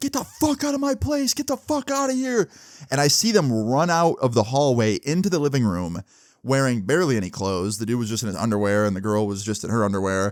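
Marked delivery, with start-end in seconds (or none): 0.0-2.5 very high, shrill, enraged screaming. Retelling how a mother found two people on her bed: imitating a mother screaming. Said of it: "start screaming at them".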